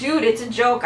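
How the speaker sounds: ordinary talk, nothing marked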